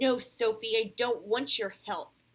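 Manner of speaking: loud, angry snapping voice. Reading a story aloud, a boy refusing help: snapping angrily. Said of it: "Alex snapped angrily".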